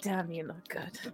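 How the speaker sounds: muttering under breath. During a dice game, the narrator voices the character V: muttering under breath. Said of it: "V mutters under her breath".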